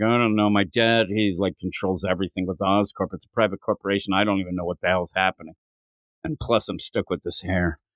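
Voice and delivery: mopey, sad-sack complaining tone that drags the mood down. Acting out a comic panel where Harry answers a question: sad sack Harry voice. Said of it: "sad sack Harry brings everything down".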